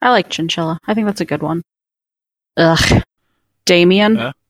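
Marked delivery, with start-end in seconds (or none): 2.6-4.3 scornful, contemptuous, much lower pitch. Discussing names with others, saying a name with contempt. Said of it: "You said it with his name was such contempt".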